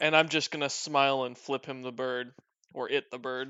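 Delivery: ordinary talk, nothing marked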